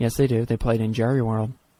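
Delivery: hushed whisper. Insisting on an answer during a sports trivia argument, whispering. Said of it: "Why are we whispering?".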